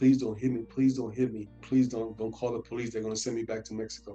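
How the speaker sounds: mock crying, tearful pleading tone. Retelling a fight, the speaker quotes a woman on the ground, imitating her crying. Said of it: "started crying, saying".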